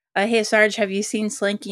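ordinary delivery

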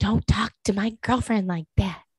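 mock whispering. Retelling what Kyle said to another person: imitating someone whispering.

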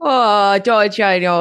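fake Minnesota-style accent. Welcoming a newly introduced guest, speaking in a put-on Minnesotan accent. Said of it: "to speak in this Minnesotan accent".

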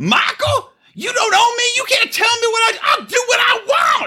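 acted, very high, shrill, shrieking screaming tirade. Imagining how she'd react if michael asked where she was; imitating her screaming. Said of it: "She would scream and be like".

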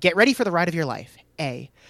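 ordinary talk

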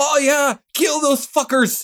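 very high, one-note, flat-pitched screaming cheer. Retelling a man behind in the cinema cheering at drones: imitating someone screaming. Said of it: "he starts screaming in the theater".

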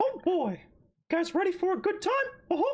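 squeaky, way up high. Asked by the others to do an impression, doing a Mickey Mouse voice. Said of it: "I'm only Mickey Mouse".

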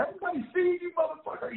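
mock very high-pitched shouting. Retelling yelling at a man trying to get through a locked window, retelling a yell. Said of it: "like I'm yelling at him".

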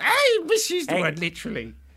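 put-on, imitated witch voice. Imitating a Twitter commenter correcting a word: Wicked Witch of the West voice. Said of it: "You sound like the Wicked Witch of the West there".

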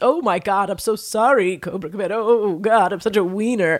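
put-on groveling villain voice. Imitating Destro apologizing to Cobra Commander: imitating groveling Destro. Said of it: "always so deferential to".

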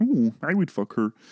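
high-pitched cartoon frog puppet voice. Voicing a frog character joking about Miss Piggy: Kermit voice. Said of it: "Kermit, shut the fuck up".

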